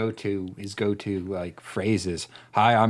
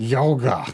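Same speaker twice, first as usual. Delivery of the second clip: put-on slurred word, higher and louder; 4 semitones higher, 5 dB louder than usual. Retelling how someone drugged out answered a question: imitating a drugged slur. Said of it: "looked over and slurred".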